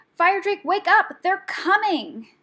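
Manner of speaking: high-pitched, very loud shouting. A rat climbs on a sleeping dragon's paw and shouts to wake him. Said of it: "she shouted".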